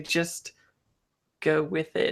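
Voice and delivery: whispering under breath. Voicing a character who murmurs to a companion: whispering under breath. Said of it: "under my breath, uh, I whisper to you".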